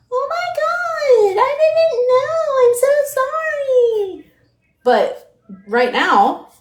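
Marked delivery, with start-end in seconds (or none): 0.1-4.3 very high, drawn-out, helpless victim voice. Imitating someone playing the victim, voice going up real high. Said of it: "it goes up real high".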